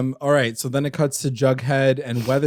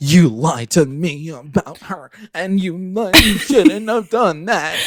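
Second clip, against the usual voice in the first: mock livid, high, furious scolding outburst; 5 semitones higher, 4 dB louder than usual. Retelling a show scene where Alice scolds Betty: imitating furious Alice. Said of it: "She's so pissed".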